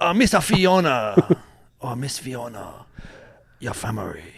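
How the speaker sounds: put-on Scottish accent with one drawn-out word. Friends ask for something Scottish; answer in a Scottish accent. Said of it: "say something Scottish".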